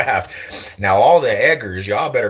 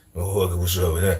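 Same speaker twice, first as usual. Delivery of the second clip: put-on slurring Memphis accent, lower and quieter; 3 semitones lower, 5 dB quieter than usual. Imitating Memphis people slurring their words: imitating slurred Memphis speech. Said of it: "They be slurring".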